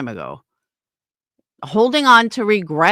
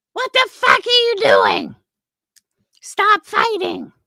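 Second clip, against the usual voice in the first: high-pitched, mock scream. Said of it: "better than me screaming".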